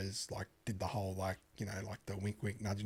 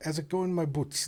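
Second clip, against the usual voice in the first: fake South African accent, much higher pitch; 6 semitones higher than usual. Australians in Miami retelling a South African barman's greeting, imitating South African accent. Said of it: "like South African".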